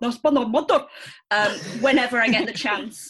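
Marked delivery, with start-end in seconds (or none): 0.0-0.8 thick, laid-on Scottish accent, shouted out. Showing the line shouted at TV dramas: strong Scottish accent. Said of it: "best said in a strong Scottish accent".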